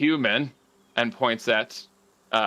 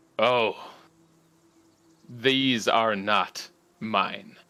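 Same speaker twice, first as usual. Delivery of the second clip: low, deep voice with a chuckle in it. Voicing a tree creature who bends closer with a deep chuckle: deep chuckling voice. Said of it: "there is a very deep chuckle".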